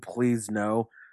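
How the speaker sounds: put-on crying voice. Recapping a wrestling match, imitating Lana crying, begging. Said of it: "Lana's crying, begging".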